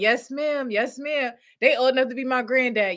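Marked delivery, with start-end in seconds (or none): 0.0-1.3 imitated happy, grateful voices. Retelling how housing residents answer: imitating happy residents. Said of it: "They be like".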